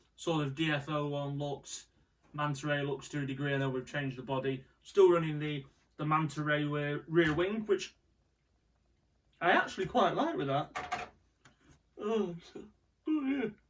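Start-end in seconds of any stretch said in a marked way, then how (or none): 12.0-13.5 high words stretched through a yawn. Describing a car build, breaking off into a yawn. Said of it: "I keep yawning".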